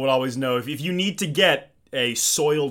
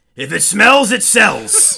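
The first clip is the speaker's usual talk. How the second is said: very loud, very raspy, high voice; 7 semitones higher, 10 dB louder than usual. Retelling what a man told the junior salesmen at every meeting: imitating Al's raspy voice. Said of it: "in a very raspy voice".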